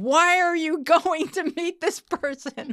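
very high-pitched, alarmed scream. Retelling own reaction to a cousin's choices: imitating own screaming. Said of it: "I'm screaming".

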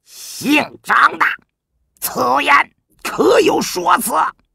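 enraged, furious, very high, each word separate. Narrator reads a general demanding an explanation from another man: furious, word by word. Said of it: "一字一顿道".

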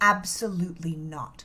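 hushed, serious tone. A parent retells correcting their young son, retelling a quiet, serious warning. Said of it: "and say very quietly, but very seriously".

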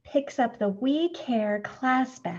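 ordinary delivery

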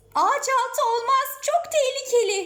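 very high, fearful, frightened voice. Caught in the rain, answering the idea of sheltering under a tree, fearful. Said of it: "dedi Ayşegül korkuyla".

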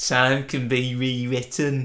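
mock, put-on Scottish accent. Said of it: "it was a terrible impression".

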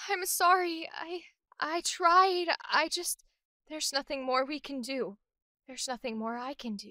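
worn-out, beaten-down, sad, defeated voice. Demonstrating the emotion Sad for her series, sad and defeated. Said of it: "She sounds so defeated".

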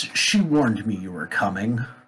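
rearing dragon's monster voice. A game master voices a dragon rearing up to speak: dragon voice. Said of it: "As the dragon rears up and says".

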